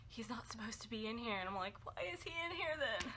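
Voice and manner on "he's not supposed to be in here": soft half-whisper under the breath. Retelling what a coworker said about a man in the room, the speaker half-whispers. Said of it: "whispers like".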